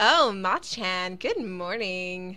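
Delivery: put-on very loud, very slow, sing-song Valley Girl voice. Reading a character's greeting aloud, meant to be southern, in a Valley Girl voice. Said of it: "I always give everyone Valley Girl voices".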